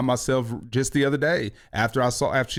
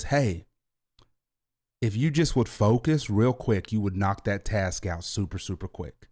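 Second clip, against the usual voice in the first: play-acted calm, easy, settled voice; 4 semitones lower than usual. Acting out how the speaker talks to them about their work: retelling in a calm voice. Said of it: "in this calm voice".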